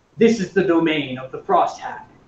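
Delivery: very authoritative, commanding voice. Narrator voicing a man guarding a bridge to the players, in a very authoritative voice. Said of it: "in a very authoritative voice".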